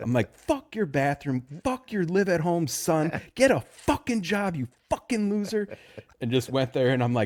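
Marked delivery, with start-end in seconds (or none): 0.4-5.8 mock high, furious angry yelling tirade. Retelling leaving a house while yelling at the son who lives there, retelling angry yelling. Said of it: "I'm just yelling the whole way out".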